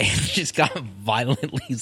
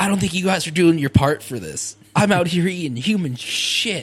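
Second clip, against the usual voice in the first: mock, high-pitched, ranting, complaining yell; 7 semitones higher, 4 dB louder than usual. Imagining Aleister Crowley sick for two weeks, acting out Aleister Crowley yelling. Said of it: "just yelling at everybody".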